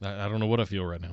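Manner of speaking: low, creepy, empty deadpan, sounding dazed. Retelling a post-match interview answer, imitating Seth's creepy deadpan. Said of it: "this really just creepy, almost deadpan, like he was stunned".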